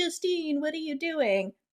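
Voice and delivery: soft, mock imploring, begging tone. Retelling a scene where one character pleads with another: retelling a pleading plea. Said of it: "Shane starts pleading".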